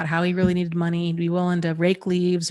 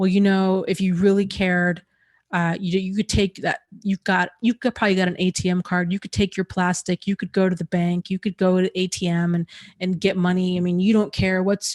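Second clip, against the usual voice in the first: mock-angry man's rant. Retelling a man at the door pressing for money, imitating an angry man. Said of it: "really becoming angry with me".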